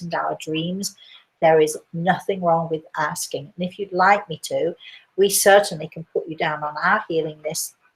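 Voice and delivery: ordinary talk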